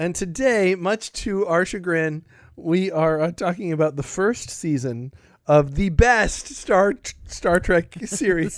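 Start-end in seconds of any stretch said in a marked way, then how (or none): 3.3-8.6 words broken up by laughter. Naming the show's topic to the co-host, laughing while talking. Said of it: "You can't even say it with a straight face".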